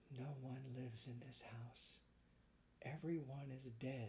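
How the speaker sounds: very quiet, barely audible, faint, weak half-whisper. Reading a story aloud, a girl at the window: half-whispering weakly. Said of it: "she whispered".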